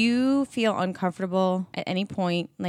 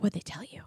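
very quiet, hushed, breathy whisper; 10 dB quieter than usual. Retelling what Tracy whispered during the show: imitating Tracy whispering. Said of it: "whispering to me".

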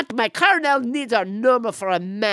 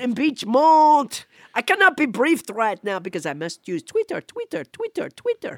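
put-on French accent with pompous, blustering delivery; 3 semitones higher than usual. Playing French Trump in a comic interview: French Trump voice. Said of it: "I'm French Trump".

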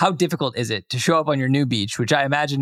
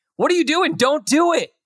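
mock yell, very high pitched; 4 dB louder than usual. A host telling the guest Rick how they watch the show: retelling shouting at the TV. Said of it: "I'm shouting at the TV like".

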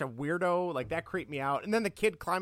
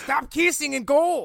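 booming, high, drawn-out bellow; 9 semitones higher, 9 dB louder than usual. Retelling a Kindergarten Cop scene, shouting at kids: Arnold impression. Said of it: "I can do a good Arnold".

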